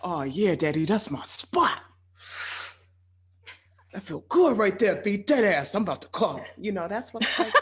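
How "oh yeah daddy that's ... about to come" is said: put-on big, buff, tough Bronx street accent. Imagining what one's vagina says during sex: big buff bronx dude voice.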